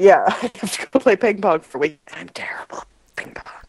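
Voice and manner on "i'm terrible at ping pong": barely voiced, very soft, breathy whisper. Mentioning an upcoming work week as an aside, whispering. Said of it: "I don't know why I'm whispering it".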